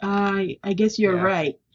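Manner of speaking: mock-sheepish, imitated sheepish voice. Retelling what a bank employee said after a phone call, retelling a sheepish admission. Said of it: "she sheepishly said".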